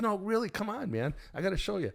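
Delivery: play-acted, very high, enthusiastic and insistent tone. Retelling how Jeff excitedly urged him to come look: imitating Jeff's excited urging. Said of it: "he would get enthusiastic and excited about it".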